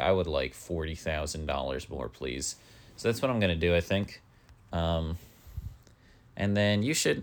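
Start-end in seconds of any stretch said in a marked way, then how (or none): none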